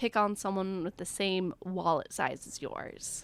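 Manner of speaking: normal talking voice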